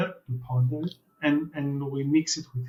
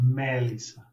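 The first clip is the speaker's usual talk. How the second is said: Melissa with strong stress on first syllable Me. Pronunciation coaching, putting the tone at the beginning: stress on Me in Melissa. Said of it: "just put the tone at the beginning".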